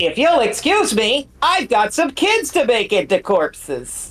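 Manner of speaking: high, sing-song, slow swooping, drawn-out put-on character voice. After clarifying whose voice an earlier bit was, doing a Bill Cipher impression. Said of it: "it was my impression of uh, Bill Cipher".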